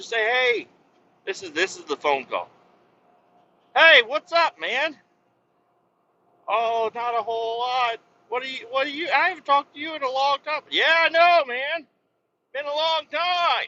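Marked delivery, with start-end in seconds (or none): 10.7-13.7 hearty, full-throated, high, loud yelling. Acting out a phone call with someone not talked to in ages, yelling. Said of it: "I don't know why I'm yelling".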